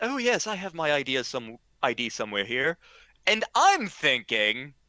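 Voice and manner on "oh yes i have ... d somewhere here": put-on thick, laid-on, very strong British accent. Retelling an id check, the speaker quotes a costumed girl's reply: very british accent. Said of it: "she says in a very British accent".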